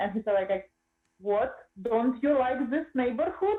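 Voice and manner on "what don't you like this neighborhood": put-on Russian accent. Retelling a man's reply to someone asking him for money, in a fake russian accent. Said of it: "Just make a fake Russian accent".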